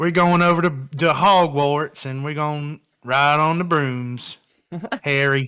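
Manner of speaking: put-on Southern accent. Asked for his best southern accent, speaker quotes a line addressed to harry: southern accent. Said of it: "give me your best Southern accent".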